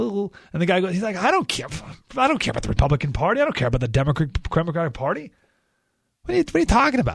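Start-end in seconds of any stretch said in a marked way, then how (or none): 1.2-7.1 put-on swooping, dismissive tone. Retelling what Bobby Knight said when asked about unifying the party: imitating Bobby Knight's dismissive tone. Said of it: "listen to his tone of voice".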